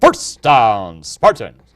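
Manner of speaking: loud, swooping stadium public address announcer cadence. Doing a brief imitation of a stadium public address announcer calling a down. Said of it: "Or like".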